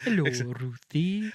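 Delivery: put-on Welsh accent. Repeating the jester character's greeting after the other speaker: imitating the jester's welsh accent. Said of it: "That's all I can say in Welsh".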